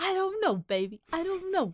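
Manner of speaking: high, playful, dismissive, teasing delivery. Showing how the other speaker always sounds: impression of the other speaker.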